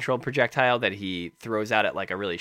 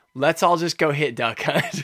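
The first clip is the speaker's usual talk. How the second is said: mock angry voice, higher and louder; 5 semitones higher, 5 dB louder than usual. Retelling other players ganging up in a match: imitating angry players. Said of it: "they all just get angry".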